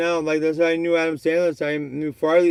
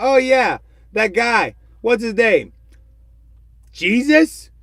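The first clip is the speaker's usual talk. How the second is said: put-on flat, pitched-up Canadian accent; 5 semitones higher, 4 dB louder than usual. Retelling a joke scene, imitating Norm Macdonald. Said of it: "He says it in that Canadian accent".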